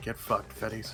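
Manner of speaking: quiet muttering under the breath. Playing a character who smirks at others struggling: muttered under breath. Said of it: "under my breath".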